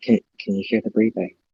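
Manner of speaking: very hushed, quiet, hurried, quick speech. In a role-play scene, a character by the door asks very quietly. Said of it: "I'm gonna ask very quietly".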